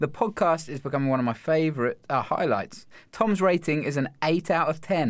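usual speaking voice

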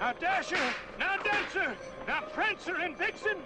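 shouting. Calling out the reindeer names: yelling out to the reindeer. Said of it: "He's yelling out to the reindeer".

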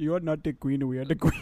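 fake, put-on accent veering into Indian. Podcast hosts riffing on a meme; one speaks in a fake accent drifting indian. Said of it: "Why do you have to make an Indian accent?".

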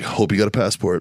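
confiding, half-whispered stage whisper. Retelling a remark to someone who just won a hunt: imitating own half-whisper. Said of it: "I just whispered at him".

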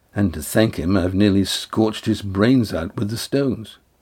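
usual speaking voice

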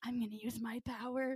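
put-on whisper. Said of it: "whispering to the mice".

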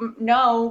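ordinary delivery

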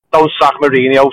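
ordinary talk, nothing marked

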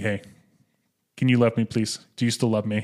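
ordinary talk, nothing marked

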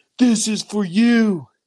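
imitated drunk man yelling. Retelling a drunk man yelling out the door, drunk yell. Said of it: "He yells out the door".

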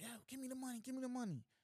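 frantic, high-pitched, rushed screaming. Retelling a man rushing up on a bank teller: retelling a robber's screaming. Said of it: "he runs up on a teller screaming".

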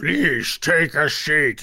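loud, warped, garbled, distorted voice. A humanoid figure on the other side tells the party to sit, in a distorted voice. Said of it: "the voice is distorted and says".

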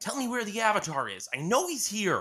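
desperate, frantic, very high, very loud demanding yell. Narrating a story, Prince Sokka shouts at the water sages: frantic Sokka shouting demands. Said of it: "[name] barged into the water temple, frantic and determined".

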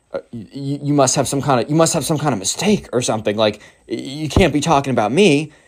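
stunned, speechless disbelief, stammering and stumbling over words. Retelling how a kid reacted when wrongly singled out: imitating a stunned, speechless person. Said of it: "the emo kid is practically speechless".

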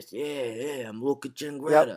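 put-on Italian New York accent. Show how a character who sounds New York Italian talks, in a Marlon Brando-esque Godfather voice. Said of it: "It talks like this".

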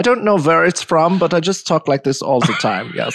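inaccurate German accent. Answering the host's question about a voice done around the house, inaccurate german accent. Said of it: "I do this German, maybe Austrian".

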